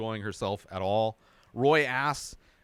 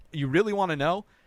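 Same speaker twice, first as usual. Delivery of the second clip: all worked up, eager, excited, pitched up; 5 semitones higher, 4 dB louder than usual. Retelling another person's answer to a question: imitating someone excited. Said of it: "gets all excited".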